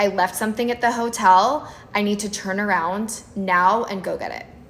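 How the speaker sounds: very stern, firm, blunt, direct delivery. Speaker retells what he blurted out near the freeway entrance, retelling a stern, direct voice. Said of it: "in a very stern, direct voice".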